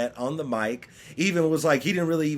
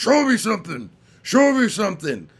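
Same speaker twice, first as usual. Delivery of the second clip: loud, raised, commanding, authoritative voice; 7 semitones higher, 5 dB louder than usual. Retelling what the referee Mike Beltran kept saying: imitating a deep authoritative voice. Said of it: "put on his deepest, most authoritative voice".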